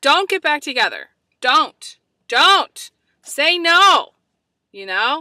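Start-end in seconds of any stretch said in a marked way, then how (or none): 0.0-4.1 loud, slow, drawn-out yell, each word hammered. Speaker addressing listeners who are going through a breakup: yelling. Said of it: "I'm yelling, aren't I?".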